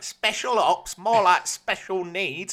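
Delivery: put-on loud, high-pitched, shouted broad Cockney accent. Recapping a TV episode, mimicking Jack after the arrest: Jack's Cockney accent. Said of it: "Jack's doing like a Cockney accent".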